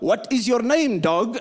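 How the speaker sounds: put-on heavy Ukrainian accent, laid on thick. Retelling a man's first words to a woman, in a thick Ukrainian accent. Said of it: "with this thick Ukrainian accent".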